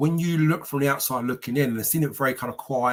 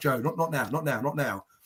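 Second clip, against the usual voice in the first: put-on nervous pleading tone, quieter; 6 dB quieter than usual. Retelling a friend urging him to wait: imitating a nervous friend. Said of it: "I can see Chris getting really nervous now".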